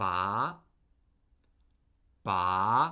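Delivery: ba said with a climbing Mandarin second tone. Teaching listeners the tones, demonstrating the second one: rising second tone. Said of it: "That's the second tone".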